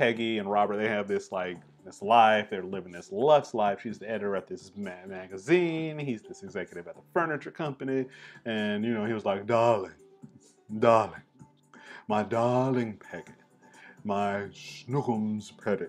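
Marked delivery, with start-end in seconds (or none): 9.5-15.9 posh, lofty, moneyed rich-gentleman voice. Picturing the executive husband addressing his wife Peggy: Thurston Howell voice. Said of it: "but he had that voice".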